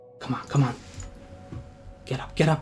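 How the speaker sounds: soft, breathy whisper spoken close. Voicing a warrior who lifts the general up: whispering. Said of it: "whispers to him".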